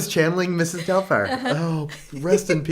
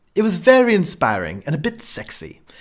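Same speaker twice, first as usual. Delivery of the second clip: swooping, best-attempt put-on British accent. Reading an email to the podcast aloud in a put-on British accent. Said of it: "I'm gonna try to do it in my best British accent".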